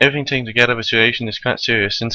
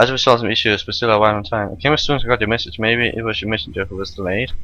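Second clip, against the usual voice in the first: ordinary talk, nothing marked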